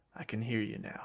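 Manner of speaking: acted muttering. Retelling how a coach talked to himself after a player stormed out, imitating muttering to himself. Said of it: "kind of talks to himself".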